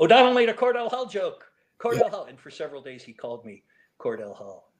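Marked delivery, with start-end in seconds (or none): 0.0-2.2 very high, very loud, shrill, delighted shouting. Retelling a colleague's delighted reaction to an obscure joke: imitating someone shouting. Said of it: "he just started shouting".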